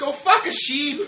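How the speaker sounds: very high, very loud, shrill Irish brogue. Asked by another speaker to say it in an irish accent. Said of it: "say that we're going to fuck sheep in an Irish accent?".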